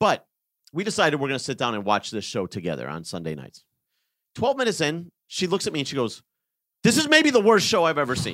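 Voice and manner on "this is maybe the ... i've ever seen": high, indignant, angry yelling outburst. Retelling what she said twelve minutes into a show they watched together, imitating her angry yelling. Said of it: "She's like yelling at me".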